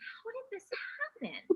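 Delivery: very high-pitched, slightly mysterious, wondering tone. Showing students how to read a mystery aloud: a little mysterious voice. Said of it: "In that kind of a voice?".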